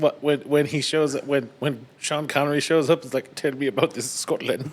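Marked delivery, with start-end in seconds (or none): 3.4-4.7 terrible put-on Egyptian accent. Quoting a movie character's line: Sean Connery as an Egyptian. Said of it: "In his terrible Egyptian accent".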